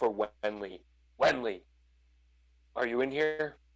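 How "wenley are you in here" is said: calling out aloud. A character searching a room full of junk piles calls for Wenley: calling out. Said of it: "plus side to a fighter with 18 Constitution, fighter paladin with 18 Constitution, / and he'll follow the sound of her voice again carefully, / I'm gonna try to find what you're under".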